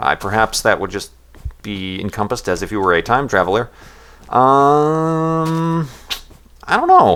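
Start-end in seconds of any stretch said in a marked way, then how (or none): 4.3-7.2 voice cracking, pitched up, very slow. Answering a question about which time period to visit, voice cracking. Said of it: "my voice just cracked".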